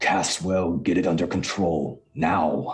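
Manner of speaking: loud, growled delivery. A character looks back over his shoulder to a line of units, growling. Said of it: "he growls back over towards Lord Caswell".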